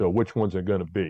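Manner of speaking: normal talking voice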